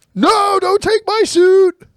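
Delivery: piercing shriek, very high pitched and very loud. Told he was overheard screaming, the speaker reenacts it, imitating own screaming. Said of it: "You were screaming really loud".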